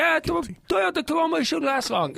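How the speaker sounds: very high-pitched, put-on Pakistani accent. Retelling what the tow truck guy said: imitating a Pakistani accent.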